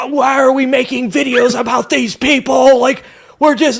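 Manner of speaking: put-on very high, loud, shrieking screaming. Imitating an imagined screaming liberal complaining about a video: imitating a screaming liberal. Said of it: "that screaming liberal that's like".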